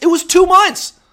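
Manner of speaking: angry, loud, very high octave jump. Speaker repeats his point to the man he is criticizing, angry, voice up an octave. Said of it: "When my voice goes up an octave, you know I'm pissed".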